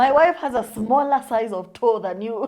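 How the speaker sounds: loud, laughing, mocking delivery.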